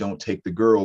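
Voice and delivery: ordinary talk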